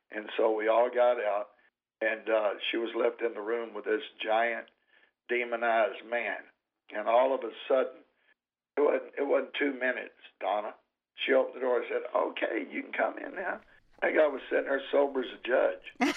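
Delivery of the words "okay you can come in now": little, chirpy, very high, tiny birdlike voice. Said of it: "she had a little voice like a Tweety bird".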